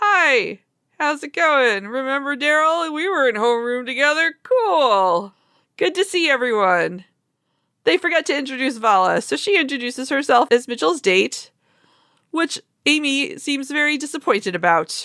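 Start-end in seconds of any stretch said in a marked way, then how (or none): 0.0-7.0 imitated awkward, stilted manner. Retelling characters' awkward meeting with an old classmate: imitating awkward small talk. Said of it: "They have a few moments of awkward".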